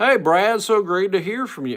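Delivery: badly done voice, very high and very loud squeal. Responding to Brad and trying to do another man's voice, failed Richard Christie impression. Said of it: "if I could do my Richard voice".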